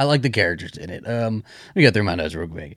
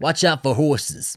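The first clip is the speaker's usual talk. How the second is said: New Jersey accent; 4 semitones higher than usual. Talking to mom: New Jersey accent. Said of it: "What's that accent?".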